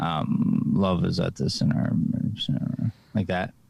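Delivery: low indistinct mumbling. A speaker shows another person how to deliver a line, mumbling. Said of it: "Can you just go like like mumble like this?".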